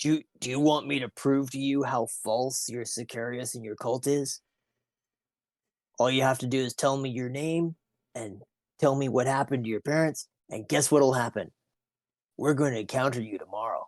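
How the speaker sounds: scary, intimidating, menacing tone. Threatening a captive in character to prove his cult false: scary, intimidating. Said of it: "I'm kind of scared of Hap right now".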